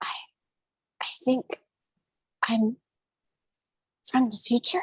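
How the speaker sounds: rough, hoarse delivery. A figure in a little-known area answers her question: very soft, hoarse voice. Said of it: "In a very soft but hoarse voice".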